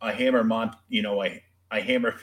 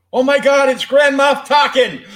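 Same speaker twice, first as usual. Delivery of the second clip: very loud, high-pitched, shrill shriek; 12 dB louder than usual. Recounting putting the first Hammer Horror film on at home, retelling a scream. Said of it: "I screamed at the top of my lungs".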